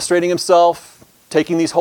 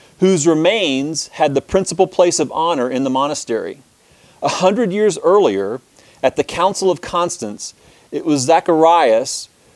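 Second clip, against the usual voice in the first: ordinary talk, nothing marked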